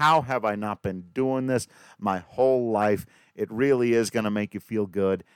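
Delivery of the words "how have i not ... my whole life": ordinary talk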